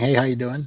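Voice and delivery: little squeaky voice. Picturing someone in a tank greeting people: squeaky voice. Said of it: "I just squeaky voice saying".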